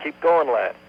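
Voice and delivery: high, loud, encouraging cheering shout. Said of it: "they shouted encouragement".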